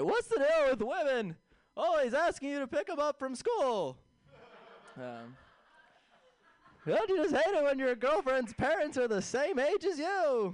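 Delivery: very high, swooping, bouncy, loud comedian voice. Doing a Jerry Seinfeld impression for the crowd: Jerry Seinfeld impression. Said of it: "You wanna hear my impression of Jerry Seinfeld?".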